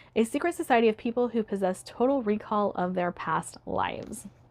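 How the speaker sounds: ordinary delivery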